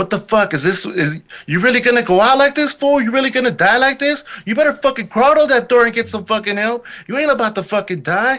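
very high, frantic screaming rant. Retelling how his inner voice screamed at him, imitating screaming George Lopez. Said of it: "my inner voice screaming at me".

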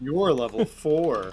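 condescending, patronizing, talking-down tone. Retelling a D&D game, quoting another player telling him his level, mock-condescending. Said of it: "he said condescendingly".

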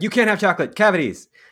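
loud screaming, acted out. Retelling how the mother in the film scolds her kid: imitating a mother screaming. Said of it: "screams at him".

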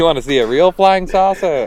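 put-on old-fashioned, 1940s-style voice. Talking with the group, a man slips into an old-timey 1940s voice. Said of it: "goes back to talking like he's in 1940".

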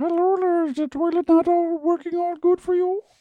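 very high voice, as talking to a dog. Mimicking another speaker's odd voice, repeating the toilet question in a talking-to-a-dog voice. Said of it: "That's like how you talk to your dog".

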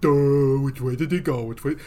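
dim, dopey old-cartoon doofus voice. Describing a guy's voice by comparing it to old cartoons: Hanna-Barbera dumb guy voice. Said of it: "The dumb guy voice was just a sort of".

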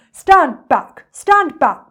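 big, loud, booming elephant bellow. Narrating, Trunky the elephant rushes out of the jungle toward the children: bellowing. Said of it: "he bellowed".

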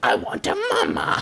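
creepy, very low, creaky ventriloquist-dummy rasp. Retelling a creepy movie scene, doing Slappy's voice. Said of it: "sounding like Slappy".

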